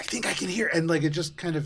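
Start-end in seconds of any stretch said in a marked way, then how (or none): 0.0-0.7 sharp, loud stage whisper, higher. Voicing a character who turns to whisper to another: sharp stage whisper. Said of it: "you sharply stage whisper".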